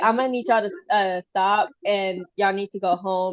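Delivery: ordinary delivery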